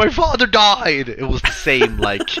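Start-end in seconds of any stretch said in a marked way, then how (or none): 0.0-1.1 shrieking, raised, very high-pitched scream. Retelling how an actor screamed in a movie scene: imitating a scream.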